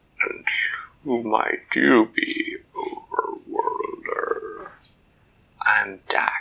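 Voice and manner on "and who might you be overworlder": very deep, burbling monster voice. Narrator reading the Kraken's words to Dak, deep, burbling Kraken voice. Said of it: "A deep, burbling voice said".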